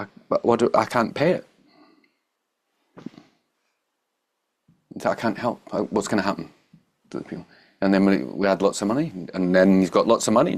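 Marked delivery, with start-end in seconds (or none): 0.7-7.5 tearful, despairing, pleading lament in tears. Retelling a man who could not pay after a bad sale, imitating someone in tears. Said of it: "he's like in tears".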